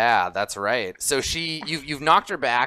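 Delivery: plain reading voice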